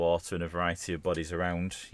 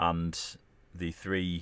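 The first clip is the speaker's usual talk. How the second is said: ordinary talk, nothing marked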